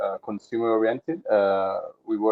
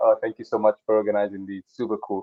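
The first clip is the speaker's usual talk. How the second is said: normal talking voice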